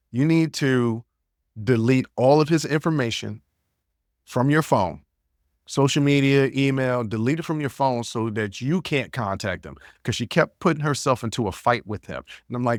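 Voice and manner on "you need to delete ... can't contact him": plain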